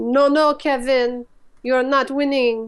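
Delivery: slow, unhurried put-on French accent. Acting out William's answer to Kevin during a game, in a French accent. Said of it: "There's my French accent".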